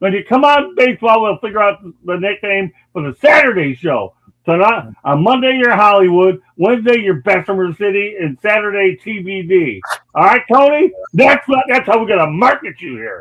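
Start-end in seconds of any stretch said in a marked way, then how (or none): 0.0-9.8 yelling, much higher pitch. Bursting for this chance, yelling it straight at Tony. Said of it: "I'm gonna yell it at you".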